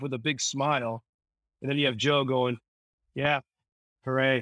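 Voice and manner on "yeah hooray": put-on sullen character voice. Speaker recounting a movie scene, quoting Joe's reaction: imitating sullen Joe. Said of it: "All sullenly".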